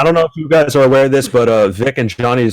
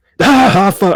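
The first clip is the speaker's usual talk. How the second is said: put-on screaming monster voice, higher; 9 semitones higher, 3 dB louder than usual. Imagining a character trying to scream: Broly scream. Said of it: "Could you imagine Broly trying to s-, like, scream?".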